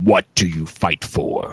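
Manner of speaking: deep, low ancient voice. Game master voicing a question the players hear in their minds, deep ancient voice. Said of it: "deep, an ancient voice".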